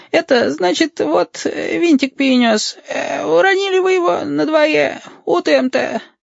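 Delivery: put-on burring, tiny elderly man's voice. Reading a story aloud, a small creature answers a man's question: burring, tiny old man's voice. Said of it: "выговорил картавым старческо-лилипутским голоском".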